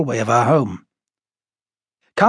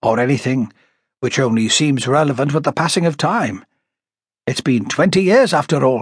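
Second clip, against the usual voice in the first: ordinary delivery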